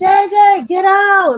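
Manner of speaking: mock screaming. Retelling calling her kids down during a break-in: imitating her own screaming. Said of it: "I was screaming, shouting".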